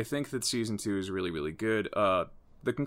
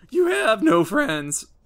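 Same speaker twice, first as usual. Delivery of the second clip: loud, high, shrill cartoon yell; 11 dB louder than usual. Recapping a Teen Titans story, the speaker voices Beast Boy's line to Terra: Beast Boy impression. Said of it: "Which is my Beast Boy impression".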